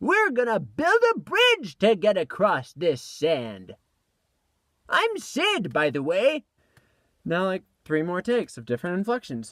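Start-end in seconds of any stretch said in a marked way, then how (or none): 0.0-6.4 put-on high little old man voice, very slow, loud and drawn out. Voice actor recording takes as Sid, in a little old man voice. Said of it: "like a little old man voice".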